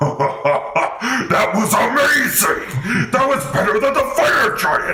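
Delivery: high, loud, delighted laughing shout.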